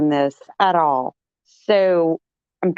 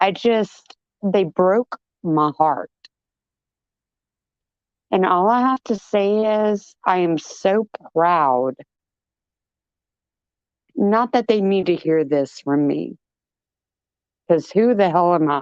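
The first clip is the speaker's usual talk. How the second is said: teary, tearful voice. A supporter speaking about people they have followed, tearful. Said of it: "I'm literally in tears".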